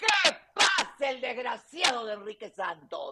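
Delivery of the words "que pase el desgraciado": dramatic talk-show host call-out, swinging pitch. Answering a request to shout the TV catchphrase again: shouting. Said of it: "Que grite, que grite".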